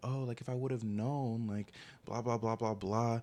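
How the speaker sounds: weepy, bawling, tearful crying voice. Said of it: "she's crying and she's like".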